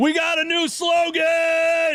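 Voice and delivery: very high shrill yell, word drawn out. Giving an update on a player's progress, yelling. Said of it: "Sorry for yelling".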